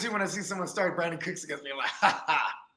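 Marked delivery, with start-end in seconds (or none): 1.9-2.5 sarcastic ha ha, whispered. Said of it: "I'm being sarcastic".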